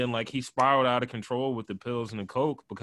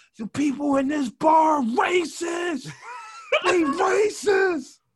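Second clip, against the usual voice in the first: imitated man screaming, higher and louder; 6 dB louder than usual. Retelling how a guy holding a street cone screamed: imitating a man screaming. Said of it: "he starts screaming".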